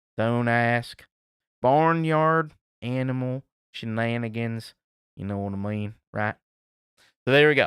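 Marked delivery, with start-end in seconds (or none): 0.2-4.8 put-on hillbilly accent, pitched lower. Reading out a listener's message as asked: put-on hillbilly voice. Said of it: "I'm gonna say it like a hillbilly".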